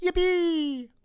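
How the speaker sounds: very high-pitched, popped-out outburst. Doing a joke impression of a Star Wars character: Darth Maul voice. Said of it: "that was my Maul".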